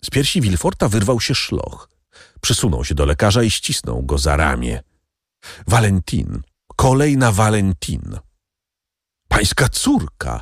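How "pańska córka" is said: astonished, horrified exclaiming. Told the next victim is the prosecutor's daughter, a man cries out: astonished, horrified exclamation. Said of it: "Wykrzyknął zdumiony i zdjęty przerażeniem Davrini".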